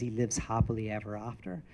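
sinister, ominous, low, hushed villain tone. Retelling a scene where he answers Charlie's question, imitating an evil smile. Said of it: "in this evil smile".

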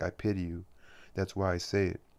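ordinary talk

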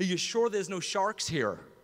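rough attempt at an American accent. Retelling what his friend Todd said, trying to do Todd's accent. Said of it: "I can't do the accent, I'll try".

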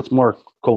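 usual speaking voice

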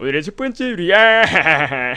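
very loud, slow, drawn-out, drawled delivery. Showing viewers how the impression goes: Lee Sun-kyun impression. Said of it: "이렇게 되는 거야".

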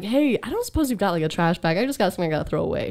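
calm, even, flat, rattled off. Speaker retells what she said to the chauffeur: imitating a calm even tone. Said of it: "I made sure my voice is like perfectly even".

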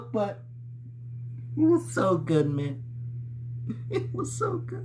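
soft, breathy, emotional, holding back tears. Speaking to viewers, holding back tears. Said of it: "I'm trying not to cry and get emotional".

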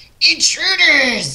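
piercing, very high goblin screech. Game master voicing a second goblin confronting the party, screeching goblin. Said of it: "The other one screeches".

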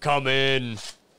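put-on intimidating voice. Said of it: "You gotta sound intimidating".

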